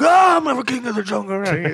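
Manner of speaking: high-pitched, boastful, bragging put-on gorilla voice. Retelling what a gorilla did, acting out the gorilla: gorilla impression. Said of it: "That's a good impression".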